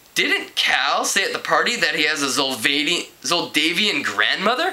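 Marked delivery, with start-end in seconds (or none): none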